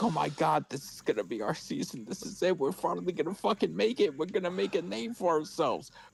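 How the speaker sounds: overjoyed, tearful, fast, swooping excited voice. Retelling own past words while watching the game: retelling own tearful excitement. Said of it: "and I'm tearing".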